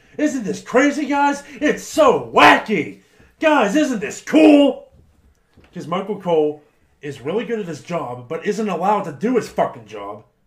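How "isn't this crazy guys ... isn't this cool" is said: very high, very loud, shrill, drawn-out scream. Picturing an overproduced hypothetical wrestling match, imitating Michael Cole screaming. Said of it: "You would have Michael Cole screaming".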